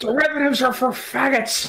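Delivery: put-on nonsense rant voice. Imitating Boardroom Jimmy ranting nonsense about trading: Boardroom Jimmy voice. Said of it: "He just go".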